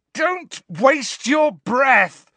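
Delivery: very high-pitched, loud, shrill yell. Harry, his scar in pain, answers the screaming woman: yelled. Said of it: "yelled Harry".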